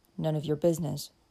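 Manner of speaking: curt, brusque, short and blunt. A man shielding a girl answers a drunkard's question, curt. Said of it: "replied Dick curtly".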